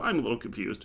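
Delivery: ordinary talk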